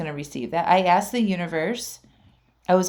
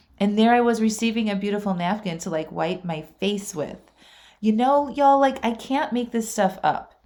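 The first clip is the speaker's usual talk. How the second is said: normal talking voice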